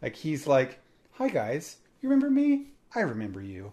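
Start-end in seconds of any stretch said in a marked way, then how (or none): 1.1-3.7 put-on sweet children's host voice. Retelling a video where Steve talks to the camera: imitating Steve's voice. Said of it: "Steve voice-ish".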